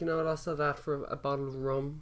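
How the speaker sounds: plain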